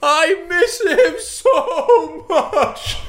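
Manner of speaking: very high, tearful, blubbering sobbing cry. Retelling a funeral scene from a film, mock-crying Brick impression. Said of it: "arrive Brick en pleurant".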